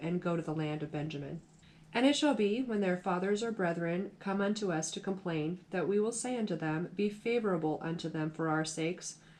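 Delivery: ordinary delivery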